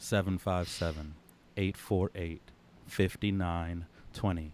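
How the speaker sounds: very slow, low, each digit drawn out. Speaker repeats the call-in number a second time for listeners, very slow. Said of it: "very slowly".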